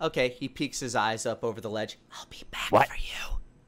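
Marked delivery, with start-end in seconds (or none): 2.1-3.4 hushed, soft, breathy whisper under the breath. Voicing a character who peeks over a ledge to an orb: whispering. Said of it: "he whispers to the orb".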